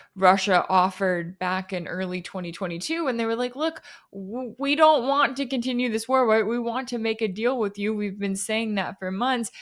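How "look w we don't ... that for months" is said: ordinary delivery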